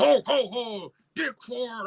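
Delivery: play-acted sloppy drunk jolly cheer, very high, very slow. Retelling how a drunk Santa rushed over to someone in a newsroom, imitating a drunk Santa. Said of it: "and the Santa was drunk".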